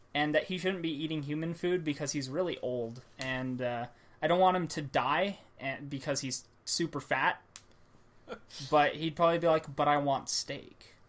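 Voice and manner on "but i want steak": put-on cat voice, deeper and slower. Imagining telling the cat he can't eat human food: Shadow's deeper voice. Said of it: "Shadow would probably like have a deeper voice".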